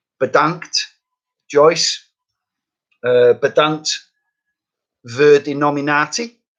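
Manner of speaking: Dutch spoken with a thick Lancashire accent. Thanking the person who nominated them, in Dutch with a Lancastrian accent. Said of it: "said in a very Lancastrian accent".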